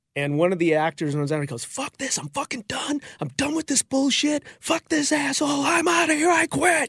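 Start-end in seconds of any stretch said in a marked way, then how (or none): 1.7-6.9 put-on very high screamed outburst. Retelling how one of the actors ran out, imitating someone screaming.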